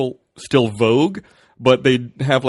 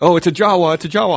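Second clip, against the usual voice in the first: mock yelling, higher; 6 semitones higher, 4 dB louder than usual. Retelling how booth guys yelled at a passing cosplayer: imitating people yelling.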